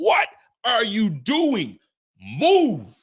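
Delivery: mock frustrated yell, drawn-out, swooping, losing it. Recounting watching TV beside his wife, he is retelling his own yelling. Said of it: "I'm yelling at the T V screen".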